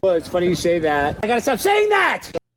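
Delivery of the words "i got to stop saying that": full-on screaming outburst, very high-pitched. Scolding yourself mid-answer, screaming. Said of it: "Why are you screaming?".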